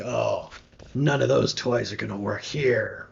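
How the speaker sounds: eerie, unsettling, creepy, creaky voice. Game master voices someone speaking from behind the players near a tree: creepy voice. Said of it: "hello, creepy voice man".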